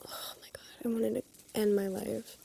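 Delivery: very quiet, hushed, upset tone. Complaining about a boring past office job, sounding upset. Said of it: "You sound upset".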